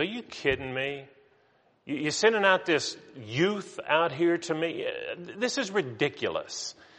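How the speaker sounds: contemptuous scornful taunt. Speaker retells Goliath's words when David walks out; mock contempt. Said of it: "Goliath looks at David with contempt and says".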